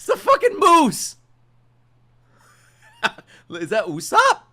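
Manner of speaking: high, loud laughing disbelief.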